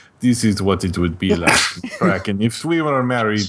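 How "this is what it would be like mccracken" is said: put-on Russian accent. Joking about what being married would be like, doing Gendy's Russian accent. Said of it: "Gendy's voice, he's Russian".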